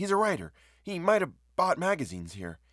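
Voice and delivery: keen, earnest, eager tone, voice lifted high. A narrator reads a woman's line to a newsdealer, eager. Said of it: "and she said eagerly".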